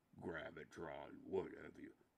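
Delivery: hushed, very quiet, deep put-on voice. Trying to remember how an old voice impression went, in a deep character voice. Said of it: "It used to be deeper".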